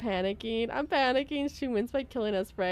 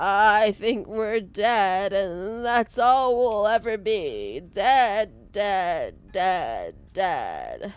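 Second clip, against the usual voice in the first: put-on very slow, loud, swooping elderly character voice; 2 semitones lower, 7 dB louder than usual. Voicing the Voice of the Broken in a game: put-on old person voice. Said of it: "I could do an old person for Broken".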